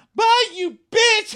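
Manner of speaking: very high, very loud, shrill screeching. Recapping a fight at a party, acting out what she yelled: mock screech. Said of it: "she's screeching in the middle of this party".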